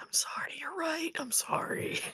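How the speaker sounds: hushed, whispered mutter from the mouth corner. Retelling what someone said with a hand on another's back, retelling a side-mouth mutter. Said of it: "like from the corner of their mouth".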